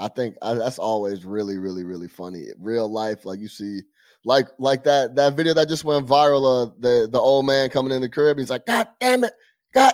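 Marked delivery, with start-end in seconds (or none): 8.7-9.9 put-on very high, cracking, fed-up outburst of anger. Retelling a viral video of an old man who cracked: imitating a man cracking in anger. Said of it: "he just cracked".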